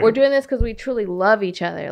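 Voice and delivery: ordinary talk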